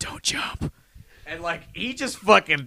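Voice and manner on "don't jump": soft, hushed whisper, right at the ear. Retelling what one wrestler told another from behind: imitating a whisper. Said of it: "just whispered".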